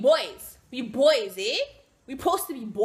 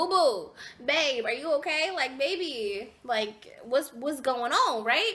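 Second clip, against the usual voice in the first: ordinary delivery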